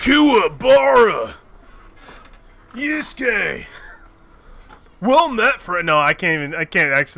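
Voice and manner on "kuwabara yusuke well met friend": slow, drawn out, pitched-up character voice. Voicing a game character, trying a Kuwabara voice. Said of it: "summon up a Kuwabara voice".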